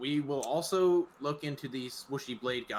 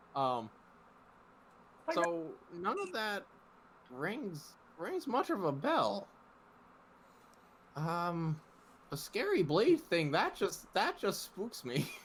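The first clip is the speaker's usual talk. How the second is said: put-on slow, high, rambling elderly granny voice; 6 semitones higher than usual. In an actual play, a grandmother answers a player over a magic speaker stone; old grandmother voice. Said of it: "Grandmother, right. father's mother, and his father was a human, so she's a human. / Grandmother, / old. is Um, old. she's, old. / Grandmother, right. father's mother, / On speaker stone".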